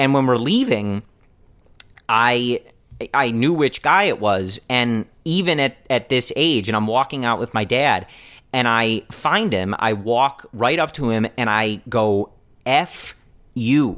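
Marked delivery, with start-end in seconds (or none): 12.6-14.0 restrained, angry, insulting tone, loud but held back. Retelling confronting a heckler after a game: imitating his own loud insult. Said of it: "like, really loudly".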